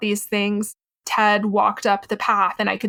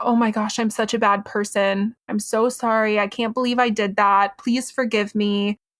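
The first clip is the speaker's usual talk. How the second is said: put-on, tearful crying voice. Retelling what a partner said while crying on the floor: imitating someone crying. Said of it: "he's on the floor and he's crying".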